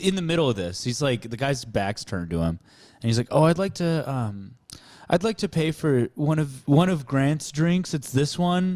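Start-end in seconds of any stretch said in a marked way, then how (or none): 3.3-8.8 put-on eager, obliging, helpful tone, pitched up. Retelling what Zach said to the guy, imitating Zach's helpful tone. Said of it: "he says in a tone like he's about to help the guy".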